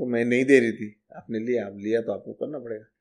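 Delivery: ordinary delivery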